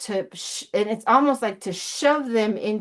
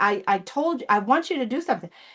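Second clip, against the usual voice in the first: put-on frustrated tone. Retelling what he said to people doing the bare minimum, mock-frustrated. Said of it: "you could tell he's frustrated".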